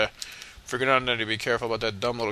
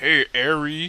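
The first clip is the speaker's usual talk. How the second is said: total, full-on put-on American accent; 3 semitones higher, 4 dB louder than usual. Showing off what they call a total American accent. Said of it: "Listen to me. I told you I got like this total American accent".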